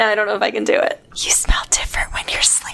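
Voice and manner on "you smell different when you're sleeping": breathy whisper, no full voice. Telling a co-host something without looking at them, whispered. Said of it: "And I'm gonna whisper it".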